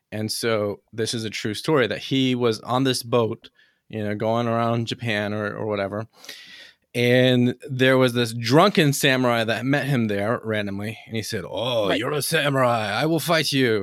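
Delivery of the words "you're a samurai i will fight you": put-on voice with a Spanish accent. Retelling a true story, voicing a drunken samurai, Spanish-sounding accent. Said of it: "make it the Japanese sound like they're Spanish".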